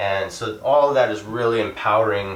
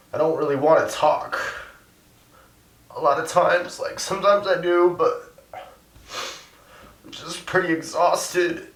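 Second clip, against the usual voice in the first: high, teary, choked-up voice. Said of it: "sorry, I'm getting verklempt".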